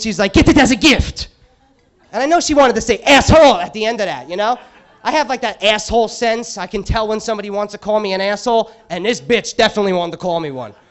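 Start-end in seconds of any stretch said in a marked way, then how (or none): 0.3-1.3 loud, play-acted irritated and mad tone. Speaker retells a woman in the perfume section getting mad at him, imitating someone mad. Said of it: "she gets all mad at me".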